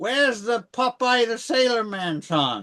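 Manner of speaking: high, puzzled, wondering tone with lifted voice. Imagining a filmmaker's reaction to a film: Al Adamson impression. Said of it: "a spot-on Al Adamson impression".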